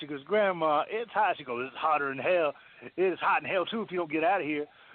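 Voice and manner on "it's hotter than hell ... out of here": put-on older Southern woman's voice, Southern accent.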